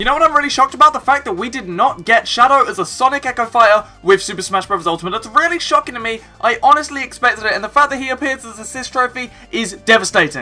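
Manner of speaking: very fast, breathless rattle with no pauses. A speaker rushes through this section with no breathing gaps, talking very fast. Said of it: "I'm talking very fast for this section".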